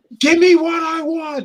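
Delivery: high, loud mock wail, whiny.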